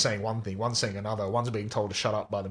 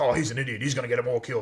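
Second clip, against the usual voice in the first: put-on angry husband ranting voice; 3 semitones higher, 3 dB louder than usual. Retelling a film scene where a man comes downstairs: blowing off steam. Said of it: "he's blowing off steam".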